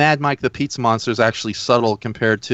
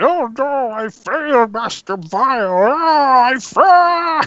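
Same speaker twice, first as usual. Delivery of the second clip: very high, very slow, stretched-out monster voice; 13 semitones higher than usual. Showing the others an impression of a monster character: Blue Globber impression. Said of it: "I just did an impression of Blue Globber".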